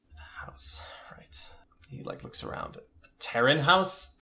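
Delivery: dazed, soft, unvoiced whisper.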